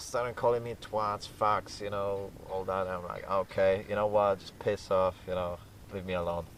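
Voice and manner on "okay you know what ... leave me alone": ordinary delivery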